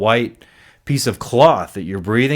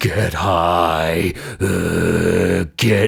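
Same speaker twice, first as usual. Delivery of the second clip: put-on evil demented voice, lower; 5 semitones lower than usual. Voicing the voice in the head during addiction: imitating an evil demented voice. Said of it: "this evil, demented voice that's like".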